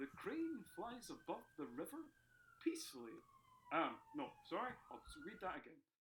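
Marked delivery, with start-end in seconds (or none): 0.0-3.1 posh, very high, swooping newsreader voice. Reading out the mystery sentence to the group in a BBC newsreader voice. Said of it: "I'll do it my best B B C voice".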